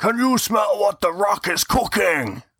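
put-on shouted American accent, very high. Trying an impression on request, showing how easy it is: The Rock, shouting in an American accent. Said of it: "You just shout in an American accent".

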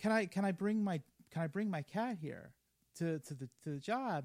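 ordinary talk, nothing marked

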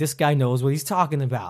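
ordinary talk

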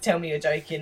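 ordinary talk

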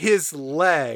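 ordinary delivery

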